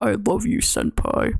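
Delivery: lowest possible voice. Answering a request to say the line: deepest voice. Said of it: "do your deepest voices say".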